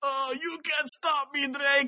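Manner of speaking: over-the-top hammy villain voice, high-pitched and slow. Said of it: "He's like".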